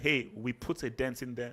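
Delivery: ordinary delivery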